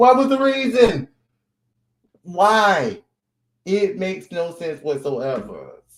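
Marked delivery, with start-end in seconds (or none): 0.0-3.0 very high, loud voice with "why" dragged out. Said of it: "in my [name] voice".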